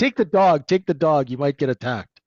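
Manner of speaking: put-on heavy New York accent. Recounting an uncle's story about selling a motorcycle in Harlem, in a thick New York accent. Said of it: "in the thick the thick New York accent".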